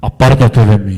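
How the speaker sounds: thunderous, very deep, very loud booming roar. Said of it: "con la voz de trueno del Señor".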